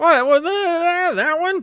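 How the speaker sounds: very high nerdy voice. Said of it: "Do it again".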